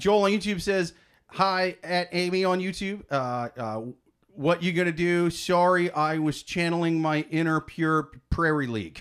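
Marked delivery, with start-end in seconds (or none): none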